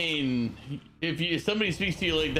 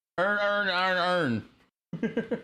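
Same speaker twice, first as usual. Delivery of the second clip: slow, put-on Baltimore accent, words drawn out; 5 semitones higher than usual. Repeating a word just heard from others: imitating a Baltimore accent. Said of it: "that's a Balmer accent right there".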